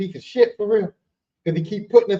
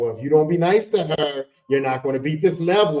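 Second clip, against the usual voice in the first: needling, taunting, sarcastic jab; 5 semitones lower than usual. Retelling how a game's love book character taunted the players: imitating a sarcastic taunt. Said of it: "he was very sarcastic and ignorant".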